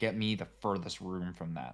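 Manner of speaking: plain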